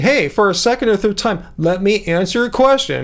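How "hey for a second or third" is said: plain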